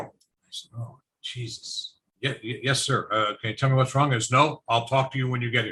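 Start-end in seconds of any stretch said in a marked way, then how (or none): 4.3-5.7 put-on aged-sounding voice. Retelling what an official told the speaker on a call, summoning him to an office. Old postmaster voice. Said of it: "I'm going to try and do the voice".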